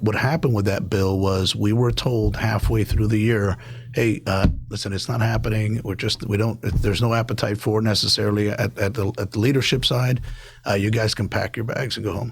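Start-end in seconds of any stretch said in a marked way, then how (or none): none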